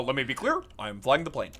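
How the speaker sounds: low politician cadence with wide, swooping pitch swings. You joke about pilots' announcements, playing one pilot with an Obama voice. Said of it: "it's it's Obama".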